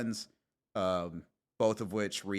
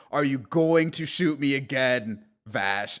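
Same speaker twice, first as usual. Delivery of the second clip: put-on character scream, pitched higher; 6 semitones higher, 9 dB louder than usual. Retelling a cartoon scene where Knives confronts Vash, retelling Knives's scream. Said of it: "Knives screams at him".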